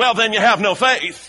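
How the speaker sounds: put-on Southern preacher voice. Retelling what the church told people who weren't rich, in a loud southern voice. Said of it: "in a kind of loud southern voice".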